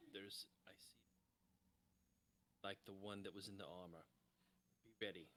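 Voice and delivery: very quiet, hushed, barely audible half-whisper. Warning the party in character while looking behind: half-whispering in character. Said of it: "I'm gonna whisper".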